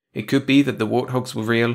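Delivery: ordinary delivery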